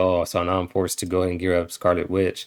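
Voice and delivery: ordinary delivery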